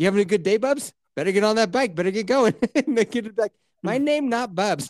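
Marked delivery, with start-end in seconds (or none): 3.8-4.9 slow, put-on Chinese accent with broken English. Retelling the kid's reply to the man who called him bubs, imitating a chinese accent. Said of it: "Why is the kid Chinese?".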